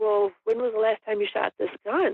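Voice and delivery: ordinary talk, nothing marked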